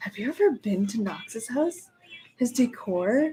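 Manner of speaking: half-whisper, hushed, under the breath. Retelling what Becky asked outside someone's house: imitating Becky half-whispering. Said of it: "whispering to me".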